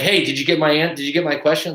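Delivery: pushy, insistent, badgering delivery with a restart. Imitating someone pushy asking about their question: imitating a pushy person. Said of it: "being pushy".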